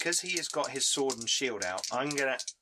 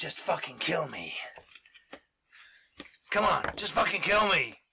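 high, slow, defiant voice; 5 semitones higher, 4 dB louder than usual. Voicing a disarmed enemy fighter who begs to be killed. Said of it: "he's just, he's like".

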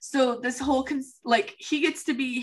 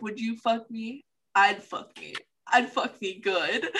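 deadpan put-on movie character voice. Retelling a movie moment, quoting the character Jay: deadpan Jay quote. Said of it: "he just looks dead face and he was like".

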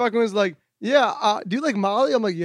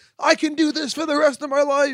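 play-acted, buzzing, hyped-up, high-pitched wired excitement; 6 semitones higher than usual. Retelling one's own words from a night out, imitating being wired. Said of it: "I was so wired and just like".

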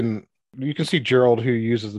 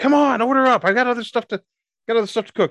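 woman screaming, much higher, louder; 12 semitones higher, 3 dB louder than usual. The narrator voices a halfling cook calling through the order window: female halfling screaming out. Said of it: "you hear a female halfling scream out".

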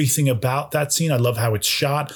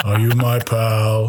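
mock deadpan delivery, lower pitch; 3 semitones lower than usual. Describing a favorite bit someone does, acting out his line, imitating a deadpan delivery. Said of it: "Total deadpan".

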